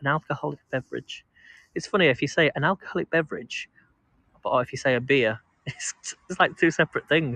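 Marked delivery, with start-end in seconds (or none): 0.0-1.2 posh-sounding speech. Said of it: "I sound very posh".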